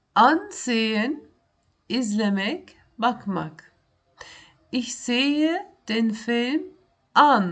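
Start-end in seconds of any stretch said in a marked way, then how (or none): 4.8-7.6 stress on the final word "an". Explaining German ansehen in Turkish, example sentence: stress on an. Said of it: "Burada anı daha vurgulu söyledim ben".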